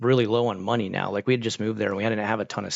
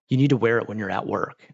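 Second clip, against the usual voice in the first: acted angry, scolding tone. Retelling how a work lead met him at the door: imitating an angry demand. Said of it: "she was so angry".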